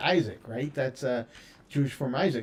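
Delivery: ordinary talk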